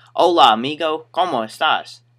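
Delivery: put-on Spanish words spoken in a country accent. Retelling how a customer greeted you, in country-accent spanish. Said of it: "Country accent, too, so it's more like".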